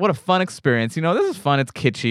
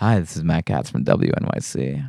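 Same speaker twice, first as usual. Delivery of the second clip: faked seductive announcer voice; 10 semitones lower than usual. Discussing whether an NPR reporter has a sexy voice, introduce yourself in Matt Katz's sexy radio voice. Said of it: "sexy uh, radio voice?".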